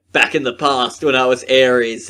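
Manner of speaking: ordinary talk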